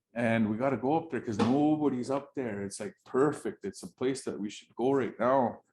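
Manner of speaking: usual speaking voice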